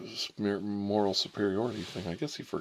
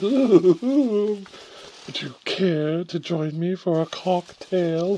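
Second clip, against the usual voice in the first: very high, very loud, very slow pompous voice; 10 semitones higher, 10 dB louder than usual. Mocking the classmate's way of talking: imitating a pompous man. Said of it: "He's all pomp-, pompous".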